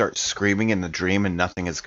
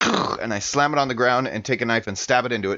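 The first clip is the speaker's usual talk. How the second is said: usual speaking voice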